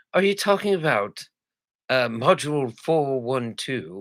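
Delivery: fake British accent, dry and slow. Retelling hearing a colleague on a phone call: imitating a British accent. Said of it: "all I could hear was her saying it in British".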